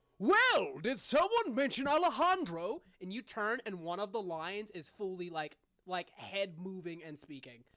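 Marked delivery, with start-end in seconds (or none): 0.2-2.8 big, booming, high-pitched talking lion voice. Narrating one of the lions interrupting a conversation, in a booming lion voice. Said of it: "interrupted by this booming voice that just goes".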